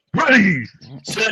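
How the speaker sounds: high, sharply barked delivery. Retelling how a quiet kid at quarterback called the snap: retelling a barked snap count. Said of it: "and he's barking".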